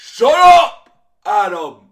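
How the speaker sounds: shrill screaming yell, very high, very loud, swooping wildly. Retelling a TV scene where Fisk yells at a captive: Vincent D'Onofrio impression yelling. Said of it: "that's my best Vincent D'Onofrio impression".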